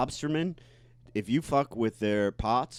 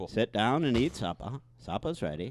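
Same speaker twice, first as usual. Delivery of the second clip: put-on Maine local accent. Showing how people in Maine talk, the speaker demonstrates: Maine accent. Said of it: "you've never heard a Maine accent?".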